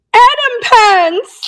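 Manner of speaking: very high, squeaky, made-up voice. Reading a viewer's comment aloud: Tammy voice. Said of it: "I'm gonna do it in Tammy voice".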